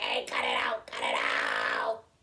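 slow, drawn-out, excited puppet voice. Retelling the character reacting to turning pages: imitating Grover getting excited. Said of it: "kinda getting excited".

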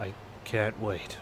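low, slow, soft swaggering bravado. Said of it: "saying it with all the bravado".

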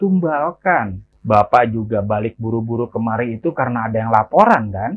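ordinary delivery

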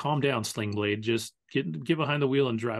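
ordinary delivery

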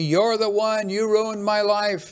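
high-pitched yelling. Retelling what a vagrant pressing close started yelling: imitating someone yelling. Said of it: "he started yelling at me".

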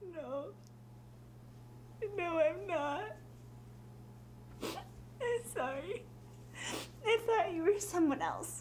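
sobbing through tears. Answering a visitor at the door who asks if she's alright, sobbing through tears. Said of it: "[said through tears...she's a sobby mess]".

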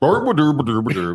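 put-on mock Swedish gibberish voice. Picturing a commenter at his computer typing: Swedish Chef voice. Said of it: "I just picture the Swedish chef. Just him at his computer going".

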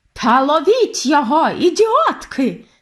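high, shrieked screeching shout. Reading a story aloud, voicing the head witch calling from the stage, screeching. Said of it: "заверещала зі сцени верховна відьма".

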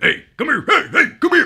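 loud, high-pitched, ghoulish ghost-like calling voice. Listing childhood favorite movies, doing a quick Beetlejuice impression. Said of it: "That's my Beetlejuice impression".

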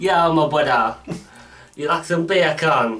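casual Jamaican-accented voice. Taking a turn in an accent game with a co-host, jamaican accent.

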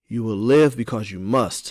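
stern, severe, unbending insistent tone. A narrator reads Afi's reply to Amari in the story: stern. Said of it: "Afi said sternly".

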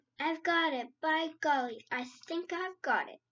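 sudden, loud burst of excitement. Sophie, after a silence, cries out to the BFG with excitement. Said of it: "with a voice filled with excitement, she cried out".

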